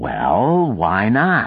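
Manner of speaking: stubborn, mulish tone. Sack answers a man who keeps laughing at him, mulish. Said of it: "Sack said mulishly".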